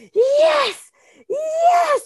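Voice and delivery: delighted, very high, joyful, drawn-out shout. A woman recalls standing up from her chair, retelling a joyful shout. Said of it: "je me suis levée de ma chaise en criant".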